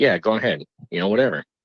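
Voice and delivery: ordinary talk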